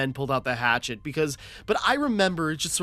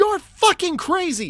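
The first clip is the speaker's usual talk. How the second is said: put-on very high, raised, yelled scream; 6 dB louder than usual. Retelling how they reacted while playing with a friend: retelling a scream. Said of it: "and I just screamed".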